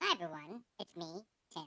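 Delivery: high, soft, chipmunk-like voice. Greeting YouTube viewers through a new microphone, chipmunk voice.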